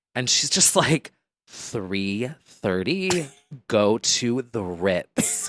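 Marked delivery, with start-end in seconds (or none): 1.5-5.5 put-on whisper, lower. Retelling a video where she whispers to a fan: imitating someone whispering. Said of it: "whispering to a fan".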